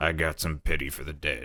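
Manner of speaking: put-on formidable, gruff old-timer voice. Trying out a voice for an old character: gruff old man voice. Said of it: "He's just like kind of old and like gruff".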